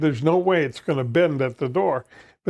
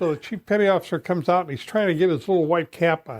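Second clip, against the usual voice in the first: normal talking voice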